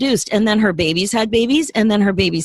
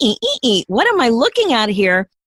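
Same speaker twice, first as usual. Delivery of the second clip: put-on squeaky, cartoon-like voice; 2 semitones higher than usual. Retelling the moment she looked into the habitat she built, squeaky cartoon-like reaction. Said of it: "squeaking my eyes going".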